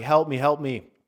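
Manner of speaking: put-on half-voiced frightened cry, kept contained. Retelling a dream from childhood: imitating own past screaming. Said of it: "sitting there screaming, like".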